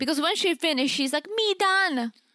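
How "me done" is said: put-on high, babyish toddler-speak voice. Retelling what she said after finishing: imitating Memphis's baby talk. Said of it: "Who the fuck talks like that?".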